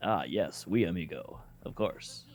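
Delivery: put-on rough, gruff Spanish accent, breathy hushed half-whisper. Describing how a character talks, Hector's gruff Spanish voice. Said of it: "he's that gruff guy that like".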